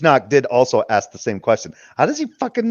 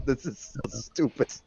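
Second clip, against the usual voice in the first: talking through laughter, quieter; 12 dB quieter than usual. Listening to a recording late at night, laughing while talking. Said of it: "Sorry, I'm just laughing right now".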